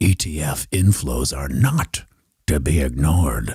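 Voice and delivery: deep, slow, dramatic movie-trailer announcer voice. Reading out a viewer's comment in a movie trailer voice. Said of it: "I'm going to say it in a movie trailer voice".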